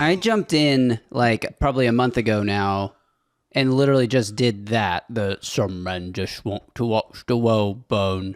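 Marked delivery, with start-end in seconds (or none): 5.1-8.4 put-on Cockney-accented older English voice. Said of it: "Why are you doing a Michael Caine?".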